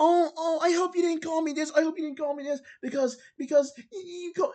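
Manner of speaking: very high-pitched, pleading, guilt-tripping whine. Retelling a message someone sent: imitating a guilt-tripping tone. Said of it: "guilt trip right here".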